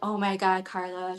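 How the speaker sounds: mortified, embarrassed exclaiming. Imitating how mom will react to hearing about smoking: imitating embarrassed mom. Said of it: "so embarrassed".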